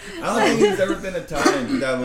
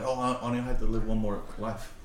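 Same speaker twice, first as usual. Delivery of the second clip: normal talking voice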